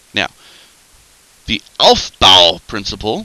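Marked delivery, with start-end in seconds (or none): 1.5-3.3 very loud voice full of sassy attitude. Speaker explaining electron configurations, naming the principle with some attitude. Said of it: "you kind of have to say it like that, it's got some attitude to it".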